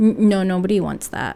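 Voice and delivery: ordinary delivery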